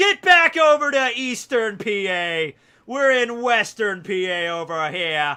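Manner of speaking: loud, drawn-out New York accent. Speaker on Pennsylvania football loyalties, finding himself in a New York accent. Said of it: "I'm talking like a New Yorker".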